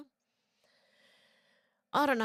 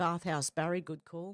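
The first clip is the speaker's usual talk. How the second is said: ordinary talk, nothing marked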